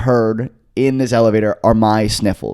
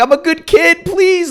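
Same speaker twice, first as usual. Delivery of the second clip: put-on very high, slow, hysterical crying and sobbing. Retelling being arrested and pleading with the cops, imitating hysterical crying. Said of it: "I'm just crying hysterically".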